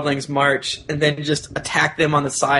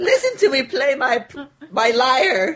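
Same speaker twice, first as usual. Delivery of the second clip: put-on evil crazy voice, much higher pitch; 11 semitones higher than usual. Asked for an accent, playing along in an evil crazy person voice. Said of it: "This is like an evil, crazy person".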